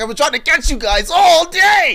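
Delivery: shrill, very high, very loud screaming yell. Retelling a TikTok of a man chasing people all day, imitating him screaming. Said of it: "he's screaming at them about this chocolate".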